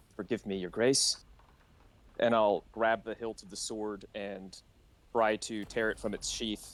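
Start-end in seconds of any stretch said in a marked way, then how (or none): 0.2-1.2 under-breath muttered whisper, lower. Player speaking as their character before grabbing the sword, whispering under breath. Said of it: "I'll just kind of whisper under my breath".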